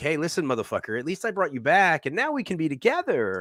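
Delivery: put-on heavy dripping sarcasm, high and sing-song. Speaker acts out how a character delivers a line, imitating a sarcastic delivery. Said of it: "delivering it in like a very sarcastic way".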